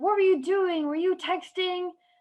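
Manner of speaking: angry, high, accusatory. Retelling a crash where the other driver came up: imitating someone super mad. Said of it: "super mad at me".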